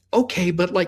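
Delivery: exasperated pleading tone, pitched very high and loud.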